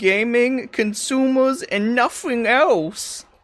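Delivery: mock tiny cartoon critter voice, very high and slow.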